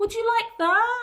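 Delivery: put-on very high-pitched baby voice. Asking the listener questions, talking in a baby voice. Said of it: "I'm talking in my baby voice".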